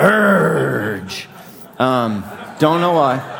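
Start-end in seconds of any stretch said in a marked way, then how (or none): 0.0-1.3 put-on pirate voice, rough, drawn-out growl. Hearing Paul's words to Titus in your head in a pirate voice. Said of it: "I kind of hear it in a pirate's voice, kind of like".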